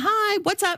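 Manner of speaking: high, curt, clipped voice.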